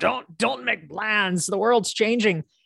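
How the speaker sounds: put-on folksy old pioneer-style man voice. Speaker mimics how people give advice, old man pioneer voice. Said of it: "why do they always talk in that old man pioneer voice".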